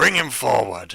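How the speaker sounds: booming, very loud call from far off. Narrating the scene, a voice shouts from across the room; loud shout. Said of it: "a loud voice shouting out from across the room".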